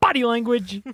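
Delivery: booming, forceful delivery. Showing another speaker how to say a phrase: loud forceful delivery. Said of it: "It's so loud".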